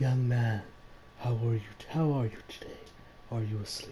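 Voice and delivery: eerie, unsettling, creepy tone. Retelling a story, voicing the woman at the window: imitating a creepy voice. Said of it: "I'm still doing the creepy voice".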